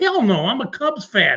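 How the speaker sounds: plain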